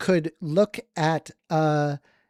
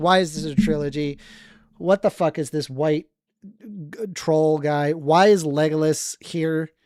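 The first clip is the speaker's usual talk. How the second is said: ordinary talk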